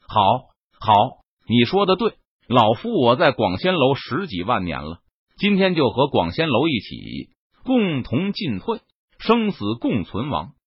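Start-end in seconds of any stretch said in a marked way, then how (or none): none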